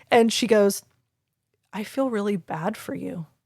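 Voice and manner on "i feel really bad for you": hushed, very quiet, sorrowful, pitying tone. Retelling what she said about the speaker's job: imitating a sad pitying tone. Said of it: "this tone in her voice, like she truly felt sad".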